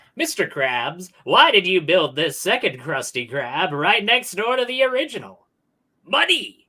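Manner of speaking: put-on cartoon crab voice. Asked by another speaker to do the crab voice, the speaker performs it. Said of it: "Do the crab voice".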